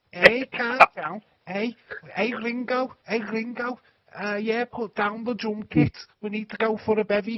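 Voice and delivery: put-on very loud, high, belted Liverpool accent. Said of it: "That's how they talk like".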